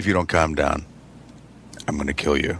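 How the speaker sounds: low, hushed, dead-quiet menacing voice. Retelling how they threaten a kid down low: imitating a quiet threat. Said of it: "Really quiet".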